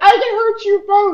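squeaky, very high prepubescent pitch. Speaker retells what he said, in a put-on prepubescent voice. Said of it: "In just like the most prepubescent voice possible".

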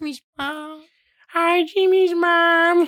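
put-on very high, squeaky, nerdy kid voice. Asked by friends to show it, a speaker does his cartoon impression: Carl Wheezer impression. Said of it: "I could do a good Carl Weezer".

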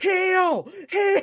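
screaming, high and loud.

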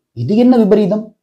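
ordinary delivery

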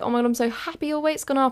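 mock gushing, high, beaming, overjoyed delight. Telling a story, the speaker quotes a friend hugging her, imitating a friend smiling. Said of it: "my friend's like smiling so much".

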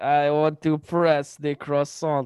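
terrible fake French accent. Joking bit about being French, in a terrible French accent. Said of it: "That's a terrible French accent".

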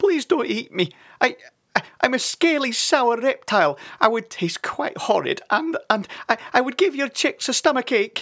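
very high-pitched, terrified, frightened pleading. Narrator voices Sid begging the chicks' father not to eat him: frightened pleading. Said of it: "pleaded Sid".

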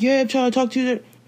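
aggressive, pushy, in-your-face delivery. Retelling what a man in a car said: imitating an aggressive man. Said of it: "He was very aggressive with it".

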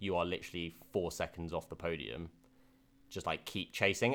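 usual speaking voice

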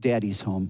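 soft, half-whispered voice. Acting out looking into the kids' rooms: half-whispering. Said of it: "just kinda whispered".

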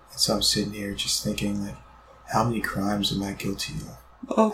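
put-on emo gloominess. Greeting everyone as Super Emo Comey, in a Super Emo Comey voice. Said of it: "this is Super Emo Comey".

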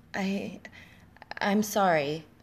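quavering, unsteady, trembling voice. A young woman apologizes to a caller who scolded her, voice trembling. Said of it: "the woman's voice trembled".

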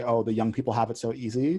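normal talking voice

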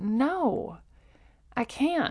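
high, soft, stressed-out, resigned delivery.

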